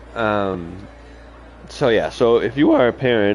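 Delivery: voice cracking and breaking mid-phrase. Welcoming listeners at the start, a parent speaks with a cracking voice. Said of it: "I don't know why my voice just cracked there".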